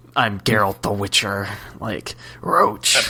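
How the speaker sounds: put-on raspy character voice. Joking about how Geralt says Roach: raspy Geralt voice. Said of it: "Geralt's got like kind of like that raspy voice".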